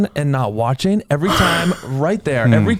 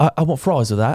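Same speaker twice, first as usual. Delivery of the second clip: put-on English accent, lower pitch; 3 semitones lower than usual. Retelling asking English people to repeat a phrase, giving their reply in English accent. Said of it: "the English accent sounds very classy".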